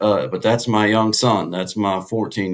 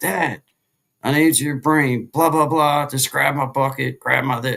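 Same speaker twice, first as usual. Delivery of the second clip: mock-frantic voice, higher; 6 semitones higher than usual. A father acting out his son's call from the lake, imitating a frantic call. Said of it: "I get this frantic call from him".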